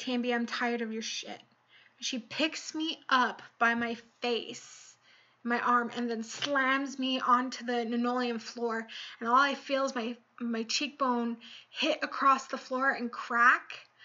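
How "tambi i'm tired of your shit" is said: put-on livid, furious voice. Retelling what the house manager said when she walked in: imitating a livid house manager. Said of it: "You can tell she's livid".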